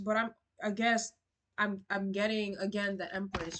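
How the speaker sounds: stammering and stuttering over words. Giving a reading to a listener and stumbling over the words, stuttering. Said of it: "I'm stuttering".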